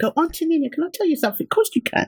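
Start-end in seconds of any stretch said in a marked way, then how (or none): 0.2-1.5 put-on high-pitched voice of a six-year-old child. Telling a co-host she sounds like her nephew, imitating her 6-year-old nephew. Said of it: "I sound like my 6-year-old nephew".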